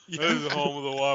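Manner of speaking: put-on acted drunk, fumbling voice. Repeating a background partygoer's line in the imagined scene: acting drunk and fumbling. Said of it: "All just drunk and fumbling".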